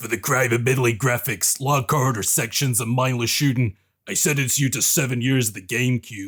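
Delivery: hard, stern lawman voice. Delivering a joke sentence on a game to everyone on the call: Judge Dredd voice. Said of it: "I'm gonna do it in Judge Dredd's voice".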